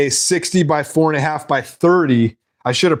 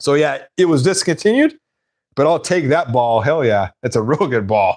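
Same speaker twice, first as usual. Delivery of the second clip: normal talking voice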